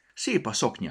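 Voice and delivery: ordinary delivery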